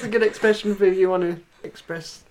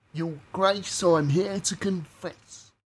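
put-on London actor voice; 3 dB quieter than usual. Performing a fed line about confessing to a bishop: Ray Winstone impression. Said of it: "I can do a half-decent Ray Winstone impression".

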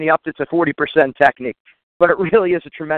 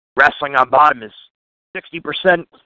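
put-on raspy old ex-military man voice. Retelling a wrestling coach's quote to the team: raspy voice imitating Coach Sachi. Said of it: "he said in his raspy voice".

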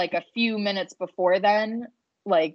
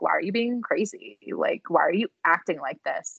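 put-on needling tone, lower pitch; 4 semitones lower, 4 dB quieter than usual. Retelling how Lindsay needled Sierra: imitating Lindsay needling someone. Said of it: "she was only trying to needle Sierra by being like".

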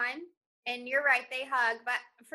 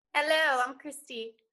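put-on British accent; 4 dB louder than usual. In a mock Love Island audition, the contestant introduces themselves, in a put-on British accent. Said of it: "run your audition in your British accent".

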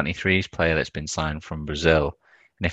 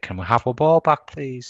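play-acted, high-pitched young boy's shout; 8 semitones higher than usual. Retelling a film scene where a little lad kicks his football over: imitating a kid shouting. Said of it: "kicks his football over and shouts over the thing".

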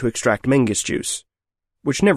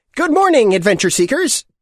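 put-on shrill, very high little-kid voice; 11 semitones higher, 4 dB louder than usual. The trail guide greets the adventure seekers in a shrill, childlike voice. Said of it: "he said in a shrill, childlike voice".

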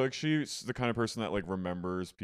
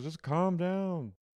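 high-pitched, unbothered, dismissive brush-off; 9 semitones higher than usual. Retelling a moment from a show: imitating Kathy. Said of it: "she goes".

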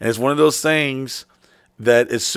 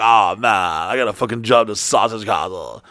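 put-on stoner bus driver voice, lower pitched; 4 semitones lower than usual. Imitating a pizza guy bragging about a job: Otto from The Simpsons voice. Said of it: "He's like Otto from fucking the".

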